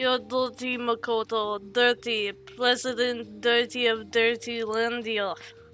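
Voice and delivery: put-on Russian accent. Speaking to Makoto about showing backbone, in a Russian accent. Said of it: "It's hard to say in a Russian accent".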